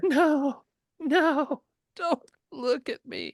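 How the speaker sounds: very high, loud, sobbing and crying. Found sitting nude in the water, Roberts speaks to the rescuers, sobbing. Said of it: "You think you hear sobbing".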